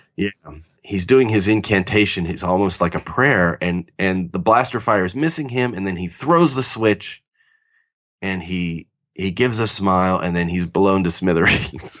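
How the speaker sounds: ordinary talk, nothing marked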